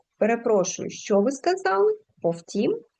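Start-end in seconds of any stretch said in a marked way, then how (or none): 2.2-2.8 Повтім said with a rising, questioning tune. Showing how question intonation changes a word's meaning, questioning tone on Повтім. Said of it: "якщо ми зробимо питальну інтонацію, то воно змінить свій сенс".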